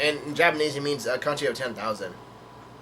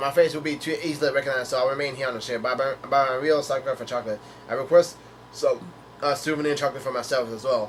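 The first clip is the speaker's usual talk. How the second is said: ordinary delivery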